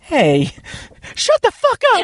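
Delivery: very high yelling outburst with voice cracking. Telling another speaker to shut up: yelling, voice cracking. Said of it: "Your voice cracked".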